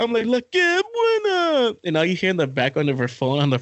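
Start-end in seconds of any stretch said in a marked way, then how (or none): 0.3-1.7 squeaky, very high put-on character voice. Retelling a drunk bit at a birthday party: La Que Buena guy voice. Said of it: "I start doing that fucking voice".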